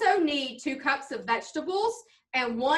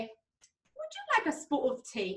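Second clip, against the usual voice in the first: jokey put-on British accent, soft and sing-song; 7 dB quieter than usual. Describing a mom who talks in funny ways, quoting her favorite saying: imitating mom's british accent. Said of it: "in a British accent".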